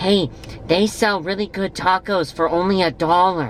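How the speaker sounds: put-on youthful bragging tone. Quoting a friend bragging, done in a young Demetrius voice. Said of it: "I'm doing a young Demetrius voice as I say this".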